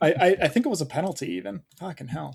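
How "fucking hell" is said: upset swearing, very hushed and quiet. Reacting to missing a goal while looking for a poll: upset. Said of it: "you sound upset".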